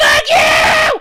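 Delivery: screaming shout, very high, very loud, shrill. Talking to viewers about a game, speaker is yelling. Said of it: "Sorry for yelling".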